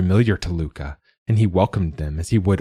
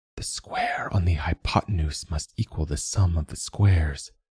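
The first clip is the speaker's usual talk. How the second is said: hushed, secretive, conspiratorial whisper; 6 dB quieter than usual. He draws Luca aside and whispers in Luca's ear: conspiratorial whisper. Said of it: "in a conspiratorial voice began to whisper".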